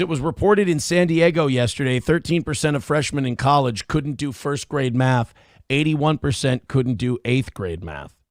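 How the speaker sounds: plain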